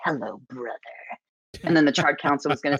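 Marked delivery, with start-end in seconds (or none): 0.0-0.8 play-acted delivery, dripping with venom. Retelling a trailer line to a brother character: imitating a line dripping with venom. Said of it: "walk past him with just dripping with venom and be like".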